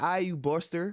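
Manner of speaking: put-on high California accent, drawn out. Teasing the guest about sounding like they're from Cali: imitating a Cali accent. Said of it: "you sound like you from Cali".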